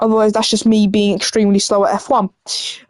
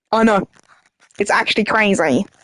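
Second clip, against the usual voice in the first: ordinary delivery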